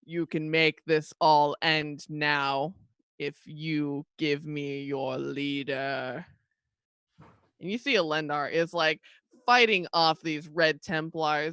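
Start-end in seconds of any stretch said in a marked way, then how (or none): 0.1-6.2 big, very slow, drawn-out booming voice. Game master voicing a voice heard again during the battle's next wave, booming. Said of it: "you hear this booming voice again".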